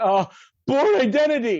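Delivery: very loud, high, frantic, panicked blurt. Retelling a TV scene where a character guesses at charades: imitating a panicked guess. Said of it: "Devin's all panicked".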